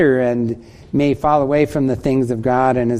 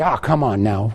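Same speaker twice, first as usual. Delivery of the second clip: put-on chiding tone, much lower pitch; 3 semitones lower than usual. Speaker recalls the old phrase used to get attention, acting out a chiding tone. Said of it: "with a chiding tone in our voices".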